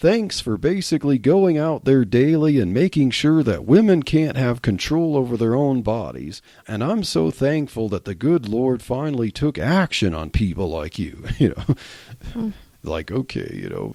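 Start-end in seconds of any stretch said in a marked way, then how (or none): none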